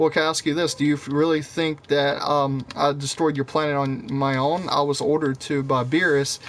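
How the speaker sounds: ordinary talk, nothing marked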